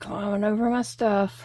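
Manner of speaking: ordinary delivery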